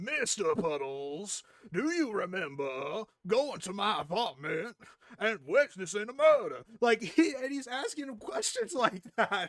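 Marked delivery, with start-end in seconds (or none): 0.0-6.6 put-on drawling Southern accent. Retelling a man representing himself questioning a witness: Benoit Blanc Southern drawl. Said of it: "pulls on this Benoit Blanc from Knives Out Southern draw accent".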